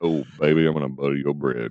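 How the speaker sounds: very low, smooth-jazz radio DJ voice. After failing at the low voice, the speaker shows off a smooth jazz voice. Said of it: "my smooth, smooth jazz voice".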